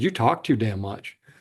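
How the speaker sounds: mock blunt delivery. Retelling what a courtroom watcher said to the prosecutor: imitating a blunt reply. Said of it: "very blunt".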